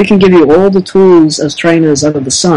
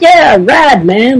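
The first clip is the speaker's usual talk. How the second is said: put-on surfer voice, higher, slower; 7 semitones higher than usual. Speaker recalling a wrestler's early character, Surfer Sting voice. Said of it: "Surfer Sting with the blonde".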